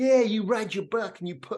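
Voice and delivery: bad put-on American accent. Imitating what an American therapist might say: crap American accent. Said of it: "that's my crap American accent".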